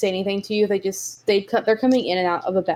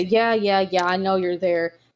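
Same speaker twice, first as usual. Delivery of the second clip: a bit put-out, grumbling, grumpy voice. Narrator voices a goblin answering someone who raised a hand; slightly grumpy voice. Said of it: "a slightly grumpy voice say".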